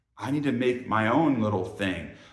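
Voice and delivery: ordinary talk, nothing marked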